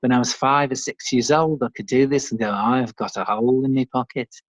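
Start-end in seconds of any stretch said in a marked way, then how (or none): 2.5-4.2 put-on Liverpool accent. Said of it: "talking like the Beatles like this".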